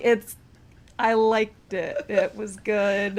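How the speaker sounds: grudging, reluctant, half-hearted, forced delivery. Teasing the other speaker for struggling to compliment a pun, imitating grudging praise. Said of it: "like you're struggling just to compliment a pun".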